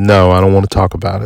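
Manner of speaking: ordinary delivery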